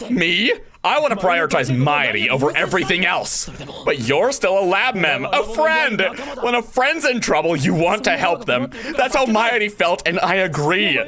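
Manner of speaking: furious, angry yelling.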